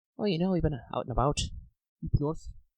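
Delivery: put-on soft Scottish or northern accent. A game player voices a Barvale local, in a Scottish or northern accent. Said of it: "inexplicably Scottish, or at least northern".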